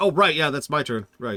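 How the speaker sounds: awkward, clumsy delivery coming a beat late. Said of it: "everyone just waits awkwardly for a second".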